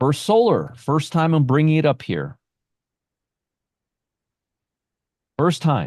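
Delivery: heavily sarcastic, sing-song, boastful tone. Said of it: "I'm being very sarcastic right now".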